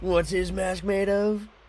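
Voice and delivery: put-on high-pitched, cartoon-style character voice. Joking while reacting to a trailer, talking in the Beerus voice. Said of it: "Just talking with the Beerus voice".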